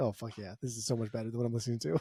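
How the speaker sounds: low, hushed, awed, sometimes fast.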